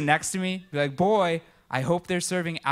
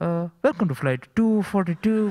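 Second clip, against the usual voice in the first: put-on Indian accent; 3 dB louder than usual. The speaker imagines a pilot's cabin announcement delivered in an indian accent. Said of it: "I'd hear Indian accents".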